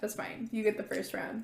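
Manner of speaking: ordinary delivery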